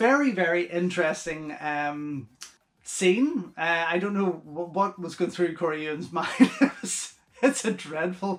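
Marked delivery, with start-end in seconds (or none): 3.9-8.4 words breaking into laughter throughout. Discussing a film's alternate ending scene, laughing while talking. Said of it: "I'm spitting because I can't stop laughing to myself".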